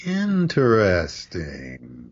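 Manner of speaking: interesting stretched out very slowly and drawn out. Showing the suspicious meaning of a word: very slowly drawn out interesting. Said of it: "if you said it really slowly, like".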